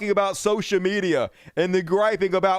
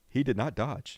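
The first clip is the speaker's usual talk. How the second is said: announcer-style, documentary narrator voice-over; 8 semitones lower, 8 dB quieter than usual. Interrupting a conversation to comment in a narrator's voice. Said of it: "Narrator's voice".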